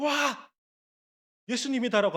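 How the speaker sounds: high, loud, joyful delighted shout.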